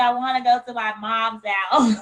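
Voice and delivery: ordinary talk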